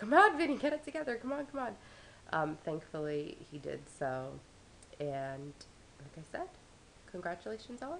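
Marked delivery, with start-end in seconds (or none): 0.0-1.7 very high, loud, freaked-out yelling. Speaker retells watching Vinny on TV, re-enacting yelling at the TV. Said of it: "I'm like yelling at the tv".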